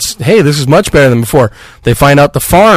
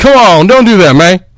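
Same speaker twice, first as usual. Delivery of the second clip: put-on higher Southern accent; 5 semitones higher than usual. Mocking an actor's lazy southern accent as Shane: imitating Jon Bernthal as Shane. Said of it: "to make it sound like he's a southern guy".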